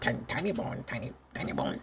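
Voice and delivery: yappy, swooping little voice, bouncing up and down. A player imagines how a game creature would sound, yappy Tiny Bones voice. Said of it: "he'd be like a yapper".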